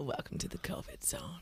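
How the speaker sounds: creepy whispered delivery.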